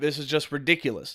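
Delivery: normal talking voice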